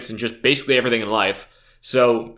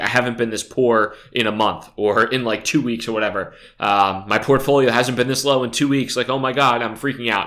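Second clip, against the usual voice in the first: ordinary talk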